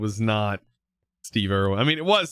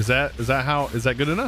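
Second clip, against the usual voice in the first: normal talking voice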